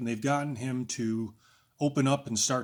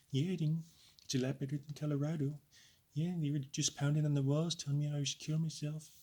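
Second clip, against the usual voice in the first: timid, meek, soft, half-closed way of speaking; 3 semitones higher, 5 dB quieter than usual. Demonstrating how people afraid of revealing themselves talk, using a meek half-closed voice. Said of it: "their voice is kind of half closed and it comes out a little bit like this".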